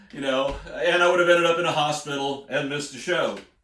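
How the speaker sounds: ordinary delivery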